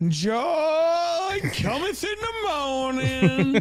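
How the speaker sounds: very high, slow, loud preacher delivery, "joy" stretched out. Quoting scripture the way she did the other day, do a Kamala preacher voice. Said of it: "gotta say it the way she did".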